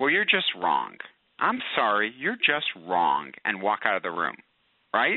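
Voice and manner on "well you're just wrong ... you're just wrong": mock curt, clipped delivery. Speaker acting out what he might say to his wife, mock-curt. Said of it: "in a curt voice".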